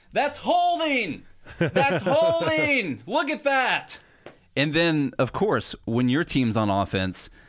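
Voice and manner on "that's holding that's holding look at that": very high, drawn-out excited screaming. Watching football as the other team runs a play: imitating a fan screaming at TV. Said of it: "you're screaming at the TV".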